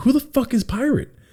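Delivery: angry, incredulous delivery at a high pitch.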